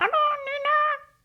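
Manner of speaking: very high wicked fairy voice, one name stretched. Imagining an evil fairy talking in someone's head, evil fairy voice. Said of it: "An evil fairy from the darkness talking in the head".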